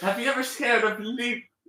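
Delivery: very high, fake British accent. Answering a question while joking around: put-on British accent. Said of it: "am I still doing British?".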